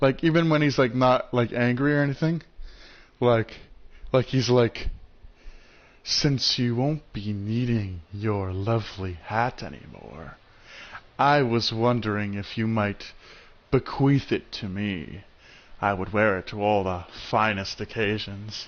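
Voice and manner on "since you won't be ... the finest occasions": slow, low, drawn-out, sinister voice. Imitating a good-guy hero's line, in a slow menacing voice. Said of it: "he always talks in a very slow and menacing voice".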